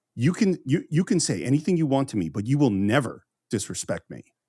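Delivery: mock icily calm voice. Retelling a dad's warning after a fit of anger: imitating icily calm father. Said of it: "totally calm, icily calm".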